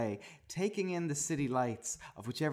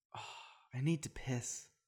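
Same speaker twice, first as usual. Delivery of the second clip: soft, much quieter; 6 dB quieter than usual. Reading a story aloud, voicing a character's line softly. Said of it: "said Jib softly".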